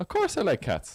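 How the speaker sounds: very high-pitched, insistent, voice jumping way up. Accused by co-hosts of hating cats, answering with voice going very high. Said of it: "You went very high there".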